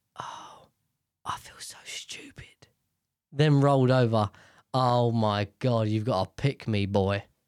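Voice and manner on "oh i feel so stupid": hushed, slow, dragged-out whisper. Reading out a post where the husband says this: slow whisper. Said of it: "slowly whispers".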